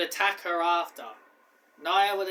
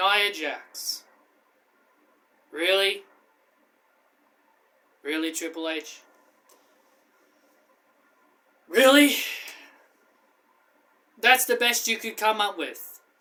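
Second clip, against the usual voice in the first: unhappy, displeased tone. Opening a review, complaining to Triple H, not very happy. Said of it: "by the tone of my voice, you can tell I'm not very happy".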